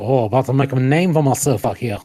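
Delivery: put-on Cajun accent, in character. Imitating Channing Tatum's Gambit from the movie: Gambit Cajun accent. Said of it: "with the Cajun accent".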